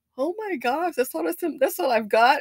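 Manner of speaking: mock panicked disbelief, stumbling over words. Retelling seeing only seven thousand dollars left: imitating own past panic. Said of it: "I panicked".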